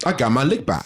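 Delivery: put-on Southeast DC street accent. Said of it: "in my best Southeast D C accent".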